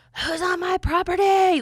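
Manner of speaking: put-on very high, loud, raspy old-timer country voice. Retelling a voice heard after gunshots out in the country, old raspy country voice. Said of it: "old raspy country voice".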